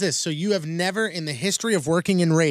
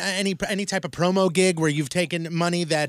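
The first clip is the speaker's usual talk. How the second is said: ordinary delivery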